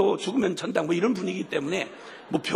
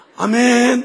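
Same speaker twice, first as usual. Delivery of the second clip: bright, cheerful, sunny, wide-awake voice; 5 semitones higher, 9 dB louder than usual. Speaker demonstrating how to answer his wife's late-night call, bright answer. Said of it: "밝게".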